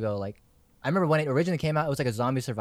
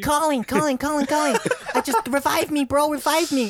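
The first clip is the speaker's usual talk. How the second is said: put-on very high squeaky tweaky teen voice, drawn out; 5 dB louder than usual. Retelling playing Battlefield at fourteen: imitating own high tweaky teen voice. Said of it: "My voice is so fucking tweaky".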